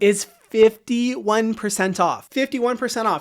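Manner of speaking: excited and breathless. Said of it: "I'm getting out of breath 'cause I'm so excited".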